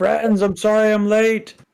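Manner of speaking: very high, loud shouting yell. Voicing a character running up to the monster late: in-character yell. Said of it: "he's just gonna yell".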